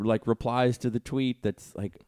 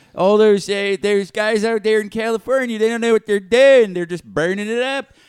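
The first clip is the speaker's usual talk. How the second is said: very loud, high, put-on Western Pennsylvania accent; 10 semitones higher, 11 dB louder than usual. Imitating supporters who blame California: Western Pennsylvania accent. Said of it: "that's my Pennsylvania accent".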